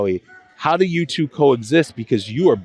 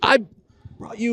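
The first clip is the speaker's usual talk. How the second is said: put-on yelling voice, pitched higher; 10 semitones higher, 4 dB quieter than usual. Retelling how Howie yelled at fans holding a sign: imitating Howie yelling. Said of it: "yelling at them".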